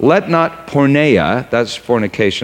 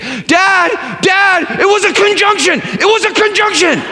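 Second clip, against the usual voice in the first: mock panicked child voice, very high, pleading tone. Retelling a child's reaction after a silence: imitating a panicked child. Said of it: "in a panic say".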